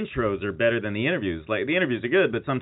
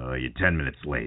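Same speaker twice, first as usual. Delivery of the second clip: reproachful tone, starting with a hesitant uh; 9 semitones lower, 3 dB quieter than usual. Retelling a recorded moment where an interviewer scolds a guest: Larry King impression. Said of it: "And he's like".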